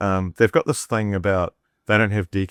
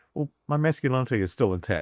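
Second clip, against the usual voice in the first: ordinary talk, nothing marked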